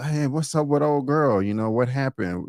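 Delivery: ordinary delivery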